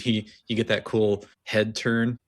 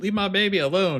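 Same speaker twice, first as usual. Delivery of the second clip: mock shrill, very high shrieking scream; 10 semitones higher, 3 dB louder than usual. Retelling a scene where a mother sees a creature over her baby: imitating someone screaming. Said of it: "she starts screaming".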